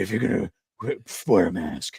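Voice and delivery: overdone growling hero voice, dropped low. Mocking how Batman still talks this way to Robin, exaggerated Batman voice. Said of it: "He's still talking like that".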